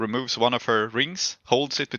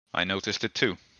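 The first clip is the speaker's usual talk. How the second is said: low, hushed murmur with sudden dawning alarm; 4 semitones lower, 7 dB quieter than usual. As Ranvir, replying after she gestures at Bidruhi, in a low voice. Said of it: "Ranvir just just says in a low voice like".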